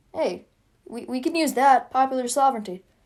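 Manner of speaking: usual speaking voice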